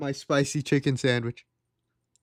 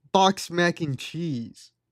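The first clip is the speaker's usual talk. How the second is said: slow, straight-faced, dead serious deadpan. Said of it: "with a straight face and say".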